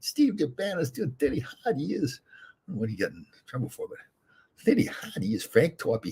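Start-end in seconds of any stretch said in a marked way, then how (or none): 0.0-2.2 very high, slow, drawn-out voice. Showing how everyone tried to imitate Frank when he came in, imitating Frank. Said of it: "we're all trying to imitate him".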